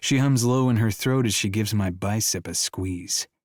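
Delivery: ordinary delivery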